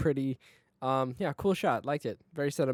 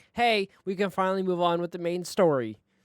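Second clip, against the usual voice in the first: ordinary delivery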